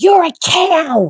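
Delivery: high, cranky mock toddler yelling voice. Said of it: "he yells out this".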